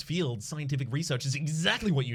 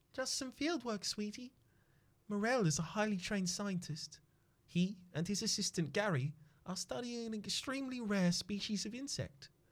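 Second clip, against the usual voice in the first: higher woman's character voice; 7 semitones higher, 8 dB quieter than usual. Reading the wife's answer after several retries, attempting the woman's voice. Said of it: "I can't do her voice".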